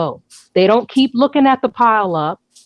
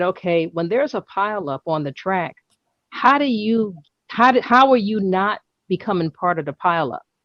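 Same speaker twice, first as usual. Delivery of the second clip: plain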